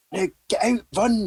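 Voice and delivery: loud shouting.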